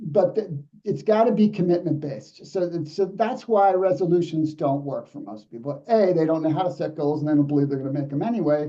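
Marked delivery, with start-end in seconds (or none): 7.2-8.7 fast, rolling, rattled-off delivery. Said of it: "yeah, I'm talking fast".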